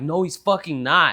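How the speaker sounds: put-on angry outburst. Retelling losing it as a kid at a parent's teasing: imitating own past angry outburst. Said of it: "lose my shit and be like".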